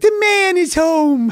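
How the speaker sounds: very high, very slow, drawn-out little dog voice. Voicing his pet dachshund Shecky greeting him: voicing his dachshund. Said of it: "So she's always like".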